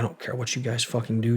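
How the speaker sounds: furious, angry, lashing-out outburst. Retelling what an angry mom said to officials: imitating furious mom. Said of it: "she's furious at this point".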